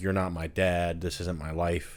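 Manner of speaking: ordinary talk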